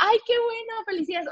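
kindly, sincere, acted out. Retelling how a star congratulated her again: imitating Brad Pitt's friendly congratulations. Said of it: "no en un tono mala onda".

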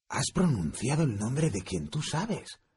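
stunned, shocked, awed and impressed disbelief. Reading a character reacting to another's words, shocked and impressed. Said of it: "dijo Ron tan conmocionado como impresionado".

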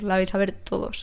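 normal talking voice

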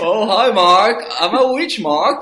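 very loud, high-pitched belted voice. Joking that a performance resembles Tommy Wiseau: Tommy Wiseau impression. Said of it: "eso parece Tommy Wiseau así".

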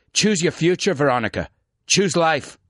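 horrible, clumsy put-on Scottish accent. Speaker performs a quoted speech, in a horrible Scottish accent. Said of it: "There's my horrible Scottish accent".

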